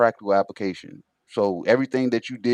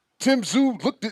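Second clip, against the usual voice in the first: mocking excited fan voice, higher; 12 semitones higher than usual. Imitating another speaker sounding like an intense fan: imitating an intense fan. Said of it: "that's what you sounded like".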